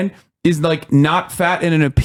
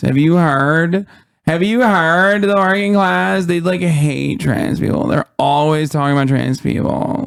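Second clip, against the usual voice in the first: heavy, exaggerated put-on creaky vocal fry. Mocking how some PhDs talk, using mocking vocal fry. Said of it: "talking with like the worst vocal fry you've ever seen".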